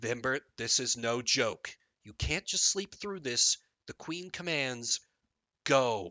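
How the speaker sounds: grave, cutting, piercing, serious tone. Narrator voicing Princess Delia to her sibling, in her most piercing, serious voice. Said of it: "in her most piercing, serious voice".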